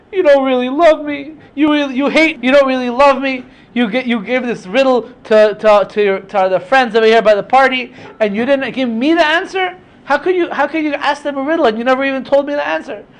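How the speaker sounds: high, tearful, crying, pleading tone. Retelling the wife going back to her husband over the riddle, imitating her crying plea. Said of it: "she's crying to her husband Shimshon".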